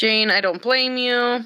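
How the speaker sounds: ordinary delivery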